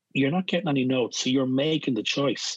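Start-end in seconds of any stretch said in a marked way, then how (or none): none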